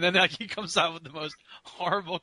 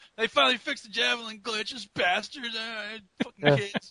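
pretend gamer complaining, higher pitch; 5 semitones higher than usual. Suggesting another speaker pretend to have played games: mock gamer rant. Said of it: "Just say you've been playing Modern Warfare two and, like".

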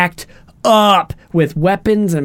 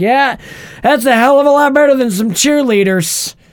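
put-on cocky showman voice, higher pitch; 7 semitones higher than usual. Retelling a movie scene where Hammer tries to sound like Tony: imitating Hammer talking like Tony. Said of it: "he's talking like him".

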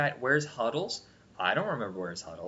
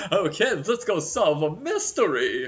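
high, loud, stretched, lingering cartoon drawl; 5 semitones higher, 6 dB louder than usual. Retelling how a cartoon ghost sounds, exactly like Snagglepuss: Snagglepuss voice. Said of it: "he sounds exactly like Snagglepuss".

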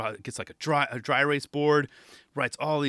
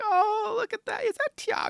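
very high, bad put-on old grandma voice. Imagining grandmas recognizing a famous skater: bad grandma voice. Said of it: "that was a horrible grandma voice".

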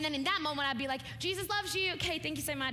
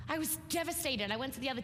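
ordinary delivery

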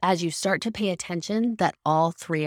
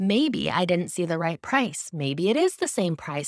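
ordinary talk, nothing marked

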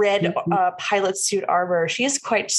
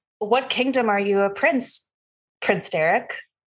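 put-on early-twenties young woman's character voice. In a role-play game, speaking to Prince Derek as a youngish woman. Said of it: "And a youngish woman, she's probably in her early 20s".

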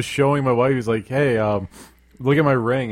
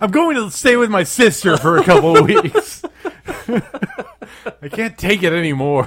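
high-pitched, loud yelling; 8 semitones higher, 5 dB louder than usual. Acting out a man yelling at his boyfriend during a fight, retelling a yell. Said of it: "Davey just yells at his boyfriend".

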